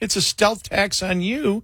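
high, drawn-out line said through laughter. The speaker acts out Democratic leaders on a stealth tax, imitating laughing leaders. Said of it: "the Democratic leaders are laughing, going".

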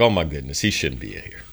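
low, soft, deeply empathetic pitying voice.

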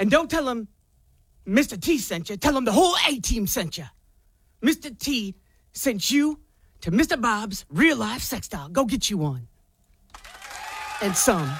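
raspy put-on man's voice. A woman acting out Mr. T's lines, in a raspy Mr. T impression. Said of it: "she said it raspily".

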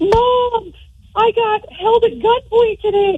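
mock tearful voice, very high, slow and drawn out. Retelling a scam call in the daughter's voice: imitating someone crying on the phone. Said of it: "crying on the phone".

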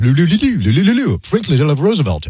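put-on French accent, singsong gibberish. Retelling the announcements heard at every train stop, in a mock french accent. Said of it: "Is that your impersonation of French?".

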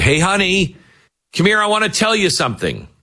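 put-on, very high, loud shout carried across distance. Retelling calling his wife over from way behind him: retelling a loud call. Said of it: "I said to my wife loudly".

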